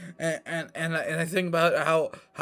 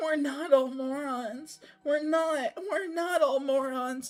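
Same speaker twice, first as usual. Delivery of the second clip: put-on whine, high, going up and down; 11 semitones higher than usual. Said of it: "That's what you sound like. A little whiny bitch".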